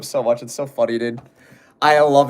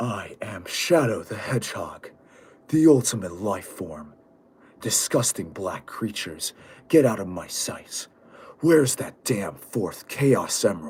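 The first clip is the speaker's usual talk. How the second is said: put-on brooding hedgehog hero voice; 4 semitones lower, 6 dB quieter than usual. Answering a request to do an impression: Shadow the Hedgehog impression. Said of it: "do your best Shadow impression".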